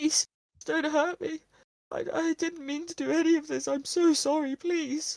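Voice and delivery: pitiful, very high-pitched, little whimpering voice. Narrating a scene, the speaker voices the figure in a pathetic voice. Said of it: "a kind of pathetic".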